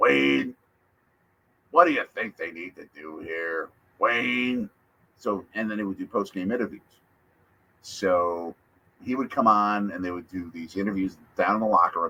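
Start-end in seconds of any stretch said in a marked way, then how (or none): 0.0-4.7 voice of a sports color commentator. Retelling how a color commentator talks: imitating Larry McCarron's voice. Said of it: "he talks like this".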